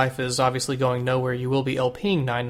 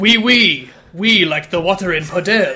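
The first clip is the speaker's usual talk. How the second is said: put-on loud, high, good French Canadian accent; 5 semitones higher, 7 dB louder than usual. Joining a comedy bit as a French Canadian wife, in a good French Canadian voice. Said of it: "good French Canadian voice".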